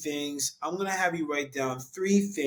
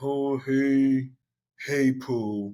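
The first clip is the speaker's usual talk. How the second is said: very slow, mopey, slumped, drawn-out drawl; 4 dB louder than usual. Speaker describing walking slumped over, doing a mopey Eeyore voice. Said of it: "you're walking with the slump over like Eeyore".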